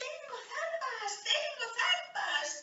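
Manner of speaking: toy cat voice, very high, very soft, delighted. Narrator reads the toy cat holding up her paw to show her claws, crying out in delight. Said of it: "The toy cat gave an excited meow. / and she held up her paw to show everyone the curved claws there. / Cried the toy cat in delight".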